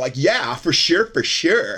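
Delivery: put-on voice like an eighties Valley Girl. Imitate the weird way a Pfizer director talks, in an 80s Valley Girl voice. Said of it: "He sounds like a Valley Girl from like the 80s".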